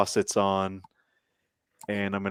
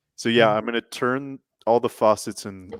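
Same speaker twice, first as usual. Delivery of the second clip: ordinary talk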